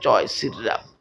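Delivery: quiet slow reluctant voice. Retelling a forced boy finally saying the words: imitating saying it softly and slowly. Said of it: "বাধ্য হয়ে আসে আস্তে আস্তে বলতেছে".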